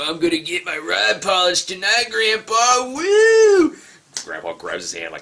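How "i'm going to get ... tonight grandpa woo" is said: very high, swooping, spaced-out stoner drawl. Retelling a movie scene, quoting the stoner dude: imitating a stoner dude. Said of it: "The stoner dude's like".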